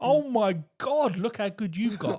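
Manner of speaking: high, gushing, over-the-top enthusiastic voice. Retelling praising a child after practice: imitating own over-the-top encouragement. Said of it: "you just have that over the top".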